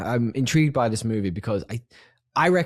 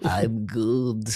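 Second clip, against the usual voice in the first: unhurried, slow, stretched-out alien voice. Asked how things are, answer as the character himself in a slow e.t. voice. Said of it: "sounds a little bit like ... but just a bit slow".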